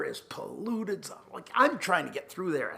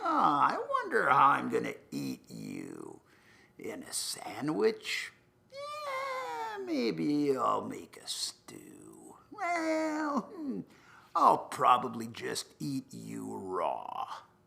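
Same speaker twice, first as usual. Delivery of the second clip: swooping, sing-song dragon voice, "yeah" drawn out; 3 semitones lower than usual. Telling a story, voicing the dragon that looks at him in the open. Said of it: "The dragon looks at me. He says".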